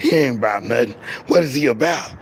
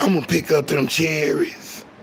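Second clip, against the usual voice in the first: dirty, nasty, innuendo-laden suggestive delivery. Showing how an ordinary phrase can be made to sound nasty, nasty, suggestive delivery. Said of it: "you can make picking up cherries sound nasty".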